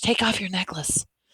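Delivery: soft, hushed whisper under the breath. Reading a story: Amory speaks to Ellen in the dark bedroom, whispering. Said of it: "she whispered".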